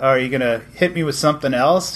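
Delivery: ordinary delivery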